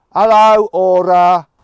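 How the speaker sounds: very loud, really strong Midlands accent. Testing a car's voice assistant, strong Midlands accent. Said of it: "a really strong Midlands accent".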